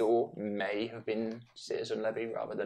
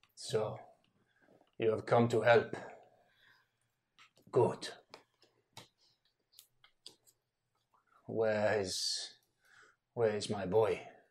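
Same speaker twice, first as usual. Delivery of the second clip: deep, put-on Russian-accented voice. Voicing a Russian character in the story, in a deep Russian accent. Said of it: "he was deep Russian".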